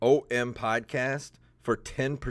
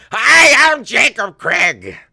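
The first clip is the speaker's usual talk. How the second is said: shrill, drawn-out, stretched scream; 12 semitones higher, 17 dB louder than usual. Mocking the co-host's loud intro: screaming like Gilbert Gottfried. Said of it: "screaming into your microphone like freaking Gilbert Gottfried".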